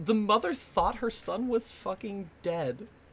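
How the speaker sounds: soft, teary, choked-up voice, on the verge of tears. Discussing a story's resolution with a co-speaker, tearing up. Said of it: "I'm tearing up".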